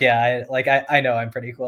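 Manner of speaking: normal talking voice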